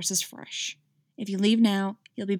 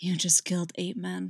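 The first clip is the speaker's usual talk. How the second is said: low, hushed murmur, barely carrying; 5 dB quieter than usual. Narrating a scene in which a man speaks close to a woman: barely audible voice. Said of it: "His voice was barely audible".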